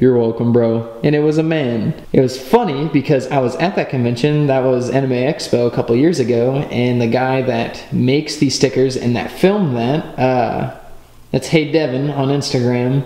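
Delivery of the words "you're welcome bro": put-on deep man's voice. Retelling a costumed cosplayer turning around to answer the cameraman, put-on deep voice. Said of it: "in a deep voice said".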